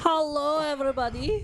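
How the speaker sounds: very high, loud excited voice. Greeting everybody at the start: excited voice. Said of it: "I think that's my excited voice".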